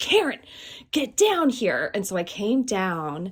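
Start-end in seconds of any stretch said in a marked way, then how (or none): 0.0-1.9 high-pitched hollering voice. Retelling how dad called up the stairs: imitating dad hollering from downstairs. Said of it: "he hollered at me from the bottom of the stairs".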